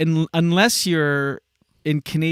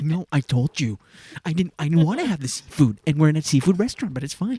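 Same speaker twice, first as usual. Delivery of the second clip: bickering, argumentative voice. Imitating the other speaker's arguing-couple voice from a resort argument: couple's argument voice. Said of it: "you have that argument voice".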